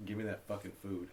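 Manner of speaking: ordinary delivery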